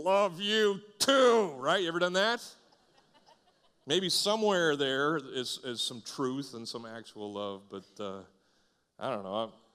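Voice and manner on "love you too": raised, high, forced through gritted teeth. Speaker acts out answering a loved one who is leaving, through gritted teeth. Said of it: "you say through gritted teeth".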